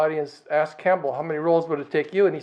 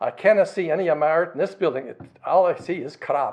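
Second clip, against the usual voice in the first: put-on Scottish accent throughout. Retelling what a teacher said about a public building, in a scottish accent. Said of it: "in his Scottish accent".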